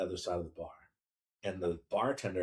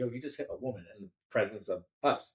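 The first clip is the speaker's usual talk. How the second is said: ordinary delivery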